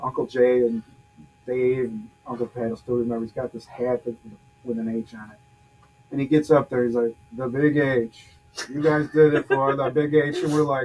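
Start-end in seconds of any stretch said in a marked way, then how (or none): 7.3-10.4 dopey, goofy, hammed-up cheer, slow. Retelling a speech to the team at the community center, imitating dad sounding goofy. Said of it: "he sounds so goofy".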